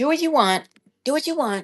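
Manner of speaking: high, snarky, dismissive tone. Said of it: "he says it with that snarky comment".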